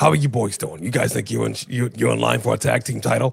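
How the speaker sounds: worn, rough, creaky smoker-like voice. Speaker mimics how the man they're discussing sounds right now, imitating his smoker-like voice. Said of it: "This is what he sounds like right now".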